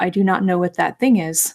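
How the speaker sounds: flat, deadpan character voice. Describing a TV character's reaction to pop culture; deadpan Temperance Brennan impression. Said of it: "she was like deadpans".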